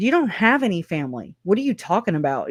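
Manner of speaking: play-acted snide, jerky, smirky, bitchy tone. Retelling Lori's reply to Charles about moving closer to family, imitating Lori's bitchy tone. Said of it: "like just really bitchy and assholey".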